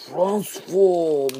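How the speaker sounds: high, booming, shrill, loud, fake Japanese accent. Presenting a transformer toy, calling its transform command in a bad japanese accent. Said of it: "I could use my Japanese accent right now".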